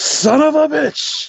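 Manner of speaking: very high, drawn-out, top-of-the-lungs yell. A player's character waking up by the water, shouting at the top of lungs. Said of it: "like at the top of my lungs".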